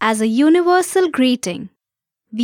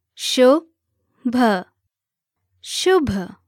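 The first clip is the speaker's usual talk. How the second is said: spoken at a slow pace. Showing a learner the first word: said slowly. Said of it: "Let's say the words slowly now".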